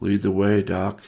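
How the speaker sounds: empty, blank, vacant mumble. Narrator voicing a man who has just stood up, mumbled. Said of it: "And he mumbles".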